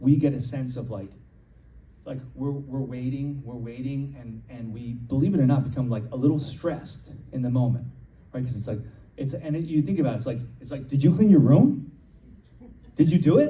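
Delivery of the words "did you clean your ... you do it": high pitch climbing through the lines. Showing classes how voices go up when asking, with rising pitch. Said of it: "as I go up".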